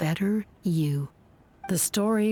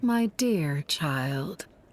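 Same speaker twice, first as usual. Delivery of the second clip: put-on young voice putting on an old lady voice. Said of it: "a younger lady doing an older woman accent".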